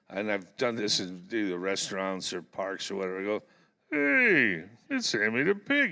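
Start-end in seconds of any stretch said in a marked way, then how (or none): 3.9-5.9 pitch way up, slow and swooping. A voice actor greets young kids in restaurants or parks: Sammy the pig voice. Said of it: "I do my voice".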